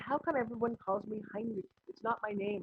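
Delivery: ordinary delivery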